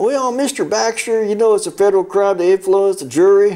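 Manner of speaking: put-on Southern accent. Retelling a judge addressing him in chambers: Southern drawl. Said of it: "he's a Southern drawl".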